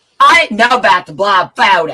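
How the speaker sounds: very loud, high-pitched shrieking scream. Arguing with others about the blob photo: screaming. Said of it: "Why are you fucking screaming".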